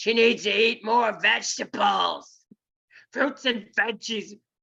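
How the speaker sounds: put-on grumbling, grumbly old man voice. Retelling a voice that yelled at the speaker, yelling in old man voice. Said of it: "yelled at me in an old man's voice".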